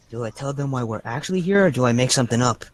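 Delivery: hushed whisper. Edward turns to the group and speaks to all of them, Edward whispering. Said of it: "he whispers to all of you".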